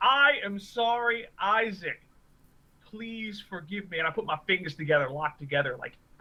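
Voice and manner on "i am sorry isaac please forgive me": very sarcastic, slow, begging tone. Kneeling in character with arms out, apologizing to Isaac: sarcastic apology in character. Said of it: "very sarcastically".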